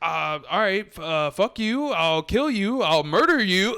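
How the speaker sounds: stunned, hesitant stammer. Retelling how a stunned friend answered a spilled drink: imitating a stunned, stammered threat. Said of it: "is stunned for a second".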